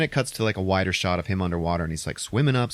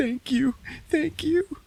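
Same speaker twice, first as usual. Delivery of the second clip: sobbing, tearful, very high-pitched voice. Retelling a film scene where a crying character thanks a wounded man: imitating someone crying. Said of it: "and she's crying".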